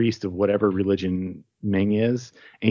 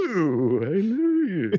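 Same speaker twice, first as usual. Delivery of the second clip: very slow, high-pitched, stretched-out robot voice; 8 semitones higher than usual. Picturing the Emperor's background henchmen talking: Hedonism Bot voice. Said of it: "talking like Hedonism Bot in Futurama".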